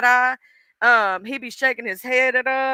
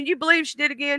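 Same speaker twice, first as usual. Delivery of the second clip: voice of a divine heavenly being, chatting; 3 semitones higher, 4 dB quieter than usual. Acting out God talking with Jesus about her: voicing God. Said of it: "And God's going".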